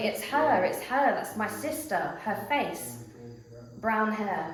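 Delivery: normal talking voice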